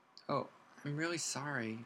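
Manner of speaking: tiny, shrunken, very small quiet voice. Reading a character's apology in a story, in a very small voice. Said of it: "said Hermione in a very small voice".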